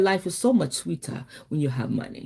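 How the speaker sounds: put-on Nigerian-accented speech. Repeating what her boyfriend said the way he said it, Nigerian accent. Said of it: "his Nigerian voice".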